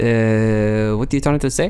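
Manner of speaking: fake, put-on French accent. Playing a french waiter as a customer asks for the bill, in a french waiter accent. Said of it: "you do a good French accent".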